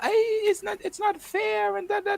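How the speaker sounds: tearful, very high crying voice. Act out a woman whose husband just got deported to Cuba, imitating a woman crying. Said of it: "so she's all crying now".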